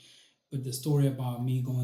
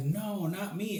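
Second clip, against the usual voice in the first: mock alarmed, flustered, high-pitched panic; 7 semitones higher than usual. Retelling how a worker reacted to a strange request: imitating a panicked reply. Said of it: "and the guy panicked".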